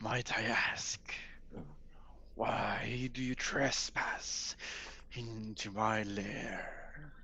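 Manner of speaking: very slow, billowing voice echoing from everywhere. Game master voices an unseen spirit addressing the party: billowing, echoing voice. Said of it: "this billowing voice begins to echo from all around you. / this billowing voice begins to echo from all around you. There is no one point of source that you can tell that it's coming from".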